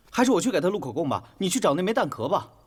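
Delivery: pushy, domineering. Telling a colleague to go find the missing shell casing: pushy, domineering. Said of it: "你 怎 么 那 么 咄 咄 逼 人 呢".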